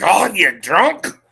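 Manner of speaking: rough, put-on Scottish accent. Comparing Irish and Scottish accents, the speaker shows how a Scot talks: Scottish accent. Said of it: "Scott's like".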